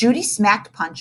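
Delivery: ordinary delivery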